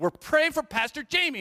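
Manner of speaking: put-on very high, loud three-year-old's voice. Retelling a three-year-old's words to an adult: three-year-old's voice. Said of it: "in his three year old voice".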